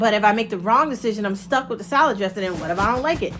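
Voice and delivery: ordinary talk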